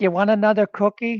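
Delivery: put-on accent with Yiddish inflection.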